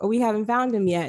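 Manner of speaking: normal talking voice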